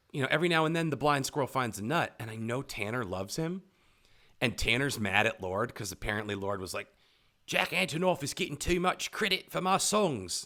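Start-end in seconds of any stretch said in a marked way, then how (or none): 7.4-10.4 weak, bad put-on New Zealand accent, pitched up. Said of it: "That's not a very good New Zealand accent".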